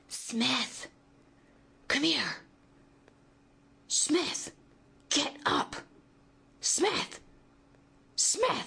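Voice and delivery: very high, slow, urgent, commanding hissed whisper. Jarl calls urgently to smith in the silence; urgent hissed whisper. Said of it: "Jarl's whispers hissed in the silence".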